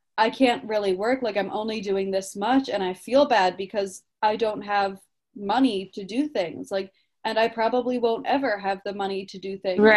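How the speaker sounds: plain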